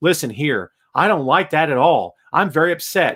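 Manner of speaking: flat robotic monotone, droned out dead level. Mocking how a wrestler sounds when supposedly mad: imitating Baron Corbin's flat robotic delivery. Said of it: "when Baron Corbin gets mad ... he goes".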